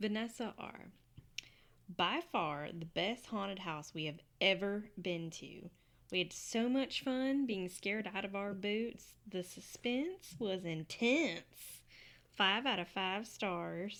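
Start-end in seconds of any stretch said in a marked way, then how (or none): 2.0-14.0 heavy country accent, dragged very slow. Reading a reviewer's words aloud in the voice they might have, super country accent. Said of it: "Super country and loved it".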